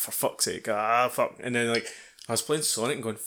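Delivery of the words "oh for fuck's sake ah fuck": grumbling, grumbled curses. Retelling playing Halo, imitating own grumbling. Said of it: "So I'm grumbling at Halo, going".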